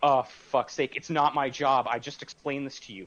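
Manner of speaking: put-on rude, impolite delivery. Retelling own answer to the woman asking again: imitating own impolite reply. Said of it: "I wasn't polite about it".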